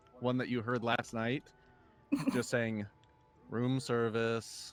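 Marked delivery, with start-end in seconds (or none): 3.5-4.7 very disinterested, indifferent tone. A game master voices someone knocking at the players' door, a very disinterested voice. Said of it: "hear a a very disinterested voice".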